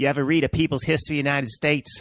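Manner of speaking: put-on Boston accent drifting into South Carolina accent. Quoting a line from Good Will Hunting, in a Boston accent drifting Southern. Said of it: "How did I just go from a Boston accent to a to some deranged South Carolina accent?".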